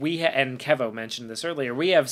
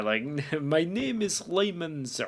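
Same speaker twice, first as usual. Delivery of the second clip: put-on Slavic accent, quieter; 3 semitones higher, 5 dB quieter than usual. Describing an actor's performance in a role, imitating Lyman Zerga's Slavic accent. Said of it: "Eastern European Slavic kind of accent".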